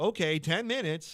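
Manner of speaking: put-on plain general American accent. Retelling a stage joke, the speaker does it American-style: American accent. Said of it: "but in American wise".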